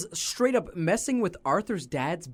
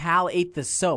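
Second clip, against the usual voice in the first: ordinary delivery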